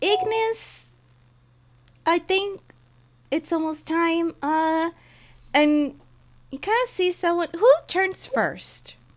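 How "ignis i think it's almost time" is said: small voice, kept tiny. Narrator voices someone knocking from behind the group, tiny voice. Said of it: "just a tiny voice of".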